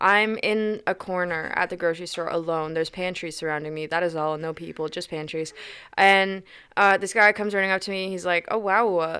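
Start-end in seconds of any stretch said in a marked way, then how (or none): 8.5-9.2 flat, listless, half-hearted amazement. Retelling a stranger running up at work: imitating someone unenthusiastically. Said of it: "this is so unenthusiastic".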